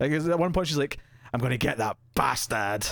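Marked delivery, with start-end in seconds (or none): 1.3-2.9 put-on English accent, much lower. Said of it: "she's got her stupid English accent".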